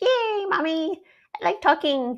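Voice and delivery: very high, loud puppet voice. Talking back and forth with Truffles, who calls the speaker mommy, in Truffles voice. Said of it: "it's a little tricky to do her voice".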